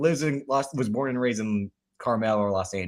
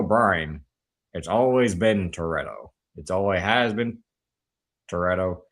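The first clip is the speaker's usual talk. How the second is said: unhurried put-on Chicago accent, leaning into the vowels; 4 semitones lower than usual. Speaker acting out a character's line, in a Ted Levine impression with Chicago accent. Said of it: "Ted Levine talks with a Chicago accent".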